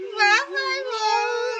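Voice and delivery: slow, drawn-out sobbing lament.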